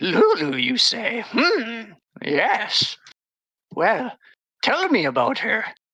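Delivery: high, croaky voice on every word. Narrator voicing a character who asks the party about their friend, croaking. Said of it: "she croaks".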